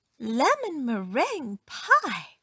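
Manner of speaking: pleased exclamation, exclaiming with pleasure. Narrator reads a woman who forgot her anger, exclaiming. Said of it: "she exclaimed".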